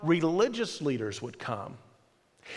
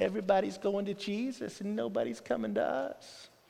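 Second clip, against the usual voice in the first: put-on hushed, very quiet, whiny grumble; 9 dB quieter than usual. A speaker acts out the disciples complaining to John, in a mock whining voice. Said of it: "I can almost hear the whining in their voice".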